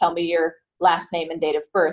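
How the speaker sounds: ordinary delivery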